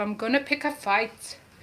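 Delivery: put-on Scottish accent. Telling how she warns her kids, in a scottish accent. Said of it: "I don't know if that's a good Scottish accent".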